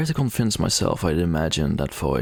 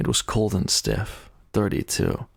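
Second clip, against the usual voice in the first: plain reading voice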